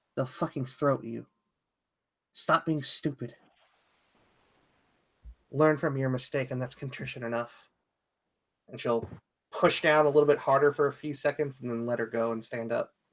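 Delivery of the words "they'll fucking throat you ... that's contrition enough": quiet, hushed stage whisper, up close. Petra, head down by Pounce's ear, keeps speaking to her: half-whispering. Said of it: "kind of whispers to her".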